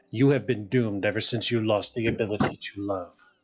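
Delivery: very low, very deep character voice. Quoting a video game line, doing a very low, deep Alucard voice. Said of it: "Very low, very deep".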